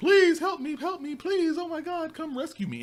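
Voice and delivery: very high, pleading yell. Retelling a caged woman in the game yelling out: imitating someone yelling for help. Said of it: "she was yelling out".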